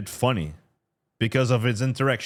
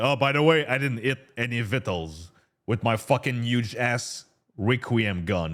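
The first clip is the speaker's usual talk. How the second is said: ordinary talk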